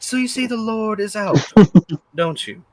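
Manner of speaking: put-on Australian accent. Asking the same question again, now switching to an australian accent. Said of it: "Australian, excuse me".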